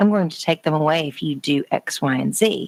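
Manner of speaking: plain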